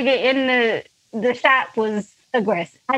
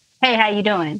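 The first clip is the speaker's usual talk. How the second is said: mock aggressive tone, lower pitch; 4 semitones lower than usual. Retelling a man's greeting in a shop: imitating an aggressive greeting. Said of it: "kinda aggressively was just like".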